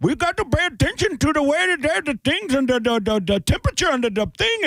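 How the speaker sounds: very high, stumbling, put-on Indian accent. Recalling the scientist in the movie 2012, speaker imitates him: imitating an Indian accent. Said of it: "That's exactly what he sounded like".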